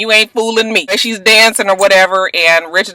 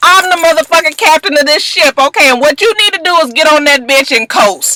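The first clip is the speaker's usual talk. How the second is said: put-on angry rant, pitched higher; 8 semitones higher than usual. Retelling how a manager told off his artist: imitating Rich Dollar's angry rant. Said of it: "she really saw that he was mad".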